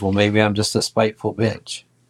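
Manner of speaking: little, snide, smart-alecky voice. Retelling a woman's snide reply when confronted in a bedroom: imitating a smart aleck voice. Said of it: "she gets that little smart aleck voice".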